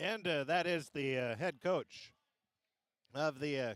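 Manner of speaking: chewing while speaking, talking through a mouthful. Broadcaster wrapping up an interview with the head coach, talking with mouth full. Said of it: "caught me with a mouthful of popcorn here".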